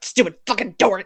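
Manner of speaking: put-on muttered cursing. Acting out a curse about a jammed door: imitating Bridget muttering. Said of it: "I'm sure she was muttering, going".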